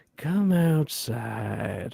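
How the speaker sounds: creepy, eerie, chilling, unsettling delivery. Retelling how a priest character in a film says a line: imitating a chilling line delivery. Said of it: "it's fucking chilling".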